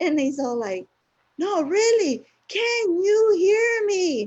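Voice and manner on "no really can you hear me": drawn-out, very high-pitched, slow screaming. Retelling how a man started screaming at them: imitating someone screaming. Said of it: "starts screaming at me".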